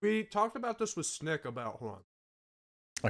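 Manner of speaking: words pushed past a mouthful of food. Talking while a listener complains there's food in your mouth; talking with mouth full. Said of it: "You have food in your mouth and you're trying to".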